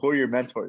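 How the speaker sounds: ordinary delivery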